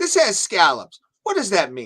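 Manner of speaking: probing, interrogating, sing-song delivery with swooping pitch. Showing a small impression of questioning a menu item: Tucker Carlson impression. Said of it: "a small Tucker Carlson impression".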